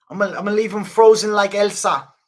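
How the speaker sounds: loud, high-pitched, taunting shout. Answering a chat poll request, doing an Israel Adesanya impression. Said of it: "So we're doing Adesanya?".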